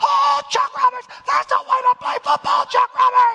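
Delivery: mock very high, loud, whooping excited yell. Retelling football practice, acting out shouted praise for a player, retelling a scream of praise. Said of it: "screaming at the top of his lungs".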